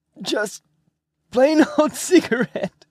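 very high, squeezed-out voice, breath held. Narrator reads one man's reply to another's question, high, breath-holding voice. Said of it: "said in a high, breath-holding voice".

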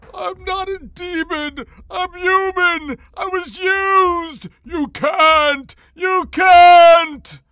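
very high, very loud, panicked whimpering. Reading a seized character's desperate outburst, in a whimpering voice. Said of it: "in a whimpering voice".

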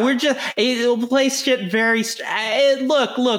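mocking parody, pitched high.

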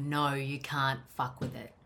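soft, calm, firm, steady no-nonsense tone. Showing the tone used telling a cat to put it away: calm and firm. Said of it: "And it's calm".

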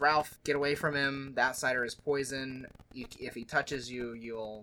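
ordinary talk, nothing marked

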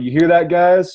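mock yelling. Retelling how a player yelled at the other team's bench: imitating someone yelling. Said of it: "he yells at the bench".

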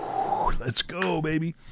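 high, hushed, excited cheer.

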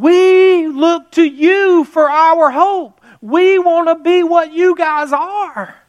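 tearful crying voice, very high pitch, very slow. Retelling a businessman's warning about lost freedoms: imitating a tearful plea. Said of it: "And he's crying".

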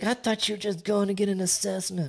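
very high, shrill, accusing yelling. Retelling what she said when he got home, imitating her yelling. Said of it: "Starts yelling".

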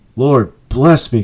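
cried out, breath taken away. A gentleman reacts after Scrooge whispers in his ear: breathless cry. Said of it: "cried the gentleman, as if his breath were taken away".

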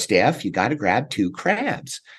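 strong, laid-on put-on American Southern gentleman accent. Retelling a childhood crabbing lesson: imitating a strong Southern gentleman accent. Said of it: "strong Southern gentleman, uh, type accent".

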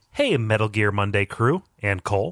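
normal talking voice

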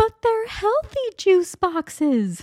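put-on very high, drawn-out young child voice. Mom acting out a dialogue with her daughter, young daughter's voice. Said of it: "I put on my best acting voice".

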